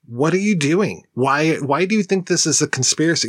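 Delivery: acted-out yelling. Recalling watching a movie the first time, retelling yelling at the TV. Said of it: "I was yelling at the TV going".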